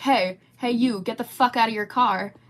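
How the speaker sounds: mock, screaming, loud yelled delivery. Retelling a stranger who sprinted around the corner at the car, imitating a man screaming. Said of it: "he starts screaming at me".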